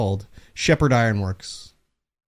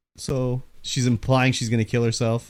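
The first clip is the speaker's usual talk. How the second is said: usual speaking voice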